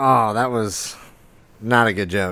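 ordinary delivery

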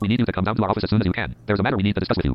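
ordinary talk, nothing marked

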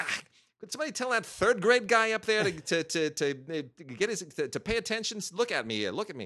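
put-on loud, stumbling New York accent. Retelling a lecturer flagging down the projectionist: Peter Guber impression, New York accent. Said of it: "he's very funny with the New York accent".

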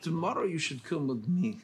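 put-on Russian-sounding Eastern European accent. Playing a hunter who meets another man: Eastern European accent. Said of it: "Russian, or Eastern European".

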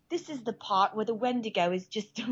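put-on British accent, pitched a touch high. Imitating a British man explaining a story part, in a British accent. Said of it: "Let's hear your British accent again".

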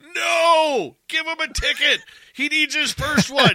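booming, shrill, very loud, high-pitched, drawn-out shout. Retelling a traffic stop, yelling at the cop: retelling yelling at a cop. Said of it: "him and I are yelling at the cop".

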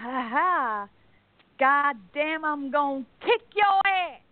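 fake, put-on American accent. Retelling a woman in a video talking to American passers-by: put-on American accent. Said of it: "I can speak some American".

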